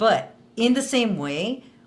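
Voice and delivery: ordinary talk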